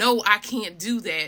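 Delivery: ordinary talk, nothing marked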